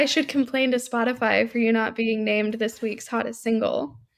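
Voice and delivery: dry, utterly serious, deadpan, straight-faced delivery. Delivering a cheesy pickup line to the others: straight-faced delivery. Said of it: "you said it, like, with such a straight face".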